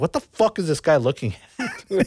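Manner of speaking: mock heated angry outburst. Retelling how Joe reacted to a staring driver: imitating an angry friend. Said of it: "He was getting all pissed".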